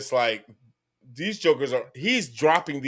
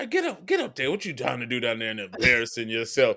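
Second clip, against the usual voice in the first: put-on stern, scolding tone; 2 semitones lower, 4 dB quieter than usual. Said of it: "He goes".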